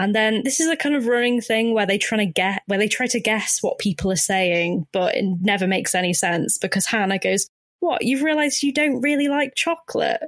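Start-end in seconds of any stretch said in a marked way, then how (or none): 7.8-10.2 put-on mimicked small child voice, higher. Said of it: "she sounds about like she's about five years old".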